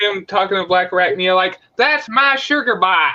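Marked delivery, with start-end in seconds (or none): 1.8-3.1 put-on country accent, higher, slower. A viewer quotes Quick Strike addressing another character, in Quick Strike's country accent. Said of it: "I like the country accent".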